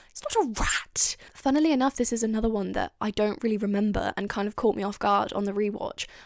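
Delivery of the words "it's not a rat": scornful, disgusted, drawn-out, pitched up, put-on. Quoting a favourite line from the episode: imitating the Doctor's disgust. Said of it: "he looks so disgusted".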